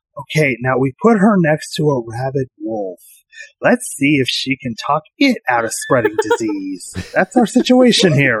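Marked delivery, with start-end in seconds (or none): 0.2-7.0 close, hushed, secretive half-whisper. Speaker retells leaning in close to Simeon during the game: half-whispering. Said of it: "I just whisper to him".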